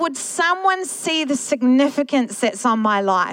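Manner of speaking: usual speaking voice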